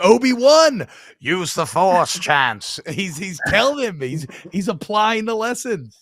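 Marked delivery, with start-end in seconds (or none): 0.0-2.8 slow, raised, strong drawn-out voice. Comparing a player to Luke in the trench run: Obi-Wan impression. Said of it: "That was a great impression".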